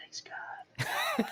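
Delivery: barely voiced, soft, hushed whisper. Retelling how he prays out loud at the table: imitating a whispered prayer. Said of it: "he whispers".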